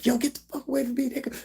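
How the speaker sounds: mock very high, furious, angry yelling outburst. Retelling how a woman fighting her boyfriend turned on a helper; imitating a woman yelling. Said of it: "She turns up on him".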